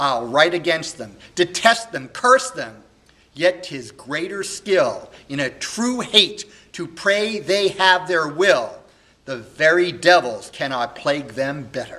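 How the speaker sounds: loud, impassioned, grief-stricken, heartbroken, furious outburst. A young man in a solo Shakespeare monologue speaks, heartbroken and very angry. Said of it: "[name] on learning this, of course, is heartbroken and very angry, / [name] is a young man who was adopted sort of as a baby by [name]. [name]' parents had died, and he's raised by [name], who's the k".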